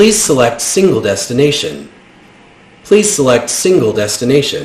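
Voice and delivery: smooth, machine-like robotic announcer voice. Narrating a scene, the speaker voices a machine as the carriage halts: smooth robotic voice. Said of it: "you hear this smooth robotic voice".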